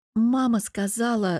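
ordinary delivery

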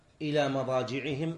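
ordinary delivery

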